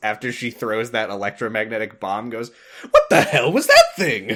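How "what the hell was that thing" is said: acted, very delighted, high raised voice. Retelling a character's reaction to an electromagnetic bomb: imitating a delighted voice. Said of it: "in the most delighted voice".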